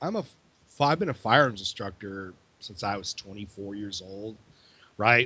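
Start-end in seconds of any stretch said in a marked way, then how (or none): none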